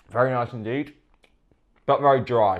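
struggling to talk through a dry mouthful. Reviewing a dry sausage roll while eating it, struggling to talk. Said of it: "So I'm struggling to talk right now".

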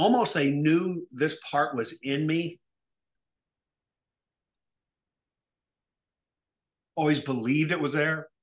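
voice catching, choked up with emotion. Telling how family and business partners always believed in them, getting emotional. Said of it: "Getting emotional".

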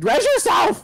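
very high-pitched, shrill shouting yell. Telling a downed teammate during a match to res themselves: yelling. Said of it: "Don't yell at me like that".

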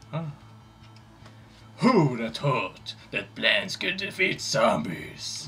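very deep, low, tough, badass old shepherd voice. Prompted by the other speaker, he delivers the line: badass old shepherd voice. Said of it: "Do it with a real badass voice, like an old shepherd".

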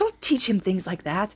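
stern, reproachful scolding tone. Narrator reads the blonde man telling the woman off, scolding. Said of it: "Hizashi scolds".

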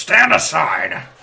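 rough, gravelly, very loud bellow. Narrating a game scene, a voice from outside calls out to the players in a gravelly voice. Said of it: "you hear a sort of a gravelly voice say".

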